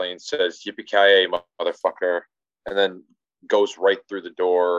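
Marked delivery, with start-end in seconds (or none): none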